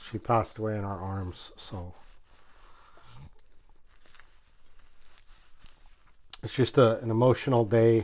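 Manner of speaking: breathy, tearful near-whisper, holding back tears. Recalling their dog passing away in their arms, holding back tears. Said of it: "I'm trying not to get emotional right now".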